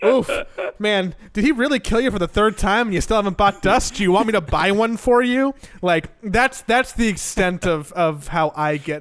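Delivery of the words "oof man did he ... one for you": high, sassy, backhanded, passive-aggressive tone. Showing how to get sassy with a teammate: sassy in-game taunt. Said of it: "I can get sassy".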